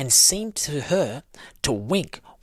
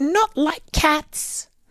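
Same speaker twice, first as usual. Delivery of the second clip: very high, piercing, shrill, impassioned outburst; 4 dB louder than usual. The mouse answers Alice's apology in a shrill, passionate voice. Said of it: "in a shrill, passionate voice".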